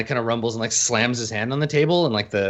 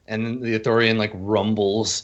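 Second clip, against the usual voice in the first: plain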